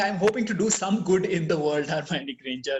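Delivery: ordinary talk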